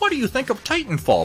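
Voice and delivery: very high-pitched voice. Quoting someone's question, the speaker does a Steiner Miniatures impression. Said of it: "That was a perfect impression of his voice".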